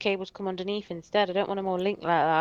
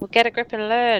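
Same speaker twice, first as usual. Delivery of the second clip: raised voice, shouting; 3 semitones higher than usual. Arguing with the other speaker about learning to help a son, shouting. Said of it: "You're shouting at me".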